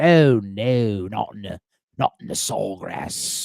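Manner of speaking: put-on British commentator accent, very slow. Wishing golf coverage were told in an accent: put-on british commentator accent. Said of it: "I want that with an accent".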